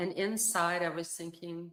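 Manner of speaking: ordinary delivery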